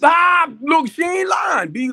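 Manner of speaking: very high, very loud, shrill shout. Addressing the family, backing up what she said, with a loud shout. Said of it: "I'm sorry to be that loud".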